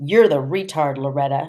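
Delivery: ordinary delivery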